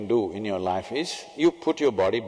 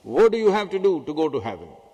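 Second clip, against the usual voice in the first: put-on big, booming, resounding teacher voice, pitched up; 5 semitones higher, 5 dB louder than usual. Retelling a Sunday school teacher questioning tiny children, booming voice. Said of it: "he asked with a booming voice".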